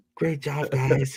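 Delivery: put-on very quiet voice. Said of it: "so quiet".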